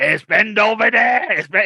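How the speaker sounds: loud, rough, drawn-out hollering voice. Retelling how the guy would call out over the phone, imitating his rough voice. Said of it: "the guy was just had this gruff voice".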